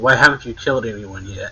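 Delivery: ordinary delivery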